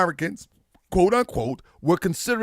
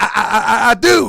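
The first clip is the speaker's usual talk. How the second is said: imitated stutter, louder; 3 semitones higher, 8 dB louder than usual. Retelling an uncle's answer to a question: imitating a stutter. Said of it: "He said".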